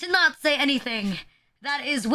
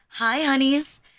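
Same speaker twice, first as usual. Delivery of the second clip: put-on cool male voice. Imitating male VTubers greeting viewers at the start of a stream: imitating a cool male VTuber. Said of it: "act really cool and they call you".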